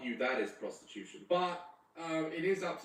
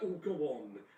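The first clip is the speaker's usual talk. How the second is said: acted, laughing, coaxing voice; 3 semitones higher than usual. Mocking women who pour a cheeky glass of wine: imitating women laughing. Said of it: "they just sort of laugh and go".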